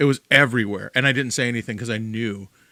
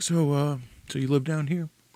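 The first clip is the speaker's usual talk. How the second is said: put-on soft, gentle soothing voice, higher; 4 semitones higher, 3 dB quieter than usual. Retelling how a guy questioned them, imitating a soft bedside-manner voice. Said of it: "in this really like soft, like bedside manner voice".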